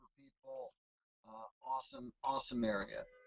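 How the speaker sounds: voice dropping low.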